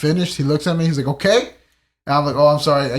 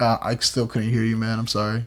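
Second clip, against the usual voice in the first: put-on flat deadpan tone, lower and quieter; 4 semitones lower, 5 dB quieter than usual. Retelling a reply to a man yelling his order: retelling a blank deadpan reply. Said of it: "like, blankly".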